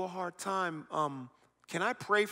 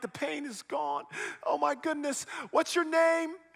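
put-on crying out through tears, pitched up; 8 semitones higher, 4 dB louder than usual. Retelling a healed woman's reaction: imitating someone crying. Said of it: "She's crying like".

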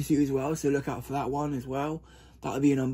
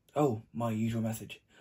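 plain

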